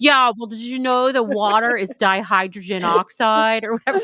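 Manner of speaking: smug, condescending know-it-all explaining tone. Telling a story about mansplaining, acting out the man in a mock-mansplaining voice. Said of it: "mansplaining happens in that voice".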